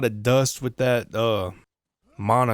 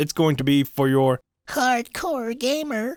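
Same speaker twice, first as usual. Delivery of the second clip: high, self-mocking put-on voice. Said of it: "so I'm mocking myself".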